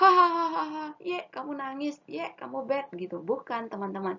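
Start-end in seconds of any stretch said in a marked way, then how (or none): 0.0-2.9 loud, shrill, jeering, taunting laughter. Showing children how not to act, laughing at a sad friend: mock laughing at a crying child. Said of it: "bukan malah menertawakan ya".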